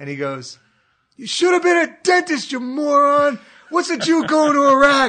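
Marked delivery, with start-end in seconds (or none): 1.2-5.1 put-on loud shout, higher and louder. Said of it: "At the top of his lungs".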